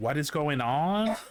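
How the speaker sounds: Canadian-style rise at the sentence end. Showing how Canadians end sentences like questions: Canadian questioning rise. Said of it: "we end everything kind of like".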